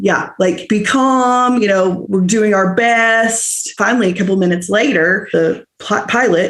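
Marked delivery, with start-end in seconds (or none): 0.7-3.7 mock shaking, quavering voice, "best" drawn out. Retelling what the flight attendant announced during the emergency: imitating a shaking voice. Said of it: "his voice was shaking".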